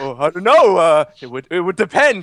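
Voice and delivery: put-on tongue-tied stammering. Retelling a game character's awkward flirting reply: imitating tongue-tied Des. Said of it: "He was so tongue-tied".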